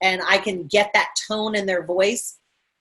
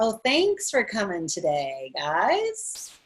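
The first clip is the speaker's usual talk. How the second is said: very slow, soft, sly sarcasm, sing-song; 5 dB quieter than usual. Showing an example line that hides a sarcastic hint: slightly sarcastic. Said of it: "that little sarcastic drip".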